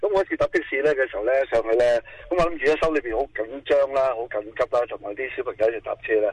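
fast, breathless, worked-up rush of words.

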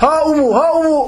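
very slow, high, long drawn-out loud shout. Speaker narrating how the Prophet called out to a companion, retelling a loud shout. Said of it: "Bağırıyor Aleyhisselam".

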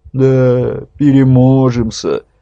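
unconvinced, doubtful, stretched-out drawl. Reading a story, a wife answers her husband's reassurance with a doubtful drawl. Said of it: "недоверчиво протянула".

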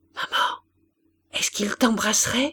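small, shivering, trembling whisper. A little girl whispers into her mother's ear, trembling. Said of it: "finit par lui demander à l'oreille, toute frissonnante".

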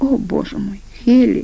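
pained groaning. A man with a headache, told the young woman's name, groans. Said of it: "застонал он".

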